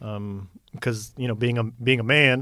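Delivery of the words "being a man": Southern US accent slipping out. Talking about providing as a man, slipping into a Southern accent. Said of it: "that accent comes out when I say being a man".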